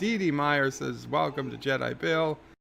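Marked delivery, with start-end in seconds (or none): none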